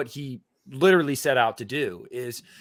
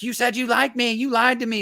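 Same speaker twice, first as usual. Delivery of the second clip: imitated screaming, higher pitch; 9 semitones higher than usual. Retelling a film scene of yelling at the projectionist: imitating Pearl screaming.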